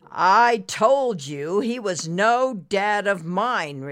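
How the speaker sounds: said with scorn. Reading a story aloud, Ricky answers Nimbus's apology: scornful. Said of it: "Ricky said scornfully".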